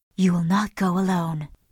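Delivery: deep, low, hushed, intimate voice. Narrator reading Hester's reply to the Reverend, in a deep half-whisper. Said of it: "Then in a deep whisper".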